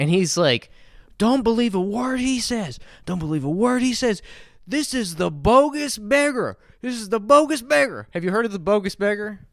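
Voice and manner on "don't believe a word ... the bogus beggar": acted-out high-pitched screaming, repeated outburst. Retelling how a man at the window started screaming. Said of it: "starts screaming at me".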